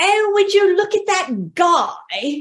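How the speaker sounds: high-pitched, put-on British accent. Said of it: "put on my best British accent".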